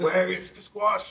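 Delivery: put-on generic Belgian accent.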